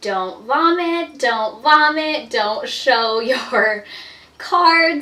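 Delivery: desperate, pleading tone, words dragged out.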